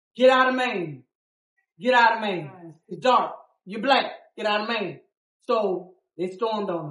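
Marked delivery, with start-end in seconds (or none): none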